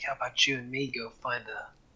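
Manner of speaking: quiet whisper. Playing a character who proposes finding a spot alone: whispering in someone's ear. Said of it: "whispers in his ear".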